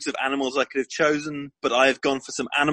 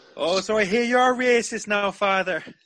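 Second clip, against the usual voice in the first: put-on Irish accent, pitched up; 7 semitones higher than usual. Asked for an Irish accent, a speaker quotes Father Ted: Father Ted Irish accent. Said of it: "give us an Irish accent".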